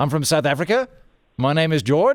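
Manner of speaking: uptalk, pitch rising at each sentence end. Imitating South African friends who ask everything, statements rising like questions. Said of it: "ask everything with a question mark".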